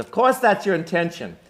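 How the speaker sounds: put-on loud, high Brooklyn accent. Quoting Matt Damon's retort to a first-year grad student, Matt Damon line in Brooklyn accent. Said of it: "Brooklyn, not Boston".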